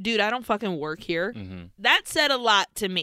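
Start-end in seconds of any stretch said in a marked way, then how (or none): 0.0-1.3 short, fast, curt, defensive delivery. Retelling how a man snapped back when asked where the beers were, imitating a curt defensive reply. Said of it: "very short and very defensively".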